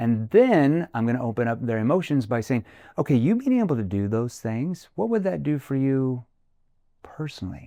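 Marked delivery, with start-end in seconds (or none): 3.0-7.7 low, caring, empathetic, concerned tone. Demonstrating how to ask someone a question, in a low concerned tone. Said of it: "Notice how my tone goes down into that concern tone".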